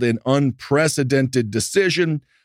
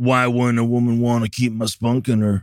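obnoxious put-on Texas judge voice. Mock the anti-abortion judge Matthew Kaczmarek with an impression of a Texas douchebag judge. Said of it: "really good impression of a Texas douchebag judge".

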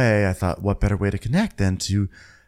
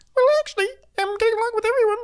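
squeaky, very high put-on voice. Retelling what Heavenly says about getting along: Heavenly's put-on beaker voice. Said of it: "Heavenly puts on her beaker voice".

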